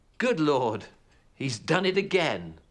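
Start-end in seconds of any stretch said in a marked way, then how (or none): none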